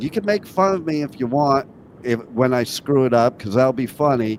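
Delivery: ordinary talk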